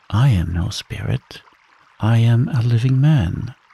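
plain reading voice

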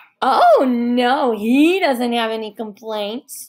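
said while laughing. Coming in behind her mother, [name] answers for him, laughing. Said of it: "[name] laughed".

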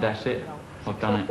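usual speaking voice

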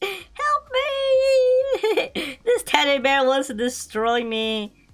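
very slow, high, sorrowful, "me" drawn out. Voicing a depressed game character while playing, sad character voice. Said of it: "He's like so sad".

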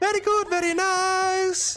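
mock priest voice, very high and slow.

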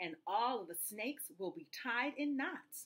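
ordinary delivery

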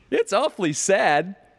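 very loud, sunny cheerfulness. The first twin speaks to the other children, cheerfully. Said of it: "the first twin said cheerfully".

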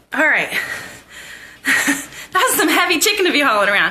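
puffing, winded, short of breath. Taking over the camera after hauling a heavy chicken, the speaker is out of breath. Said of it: "I'm kind of out of breath".

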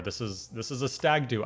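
normal talking voice

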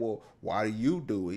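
ordinary talk

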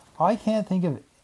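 ordinary delivery

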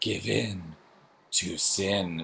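very slow sensual voice

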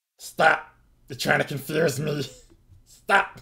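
put-on very high, very loud, mean elvish-accented screech. In a role-playing game, someone speaks as a kobold to the players: mean kobold voice. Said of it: "the mean kobold, ... And it almost sounds like an elvish dialect or accent is coming out of this mean kobold".

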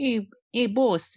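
whiny, high-pitched servant voice. Discussing a disliked version of the character, a speaker does Felix Leiter's whiny patsy voice. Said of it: "he's like a mobster's patsy. In terms of his accent".

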